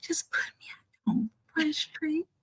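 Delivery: whispering. Talking aside to Nikki about being embarrassed in front of company: whispering. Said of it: "I'm whispering".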